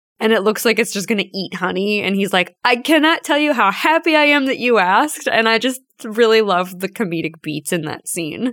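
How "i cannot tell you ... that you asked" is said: put-on booming, high-pitched giant puppet-head voice. Retelling a comedic anime scene to a listener, booming Tamaki voice. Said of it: "Tamaki's voice is just booming".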